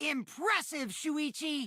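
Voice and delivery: high, excited, full-throated yell. In a game scene, a character praises another character's reasoning, yelling. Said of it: "You're yelling, Kokichi".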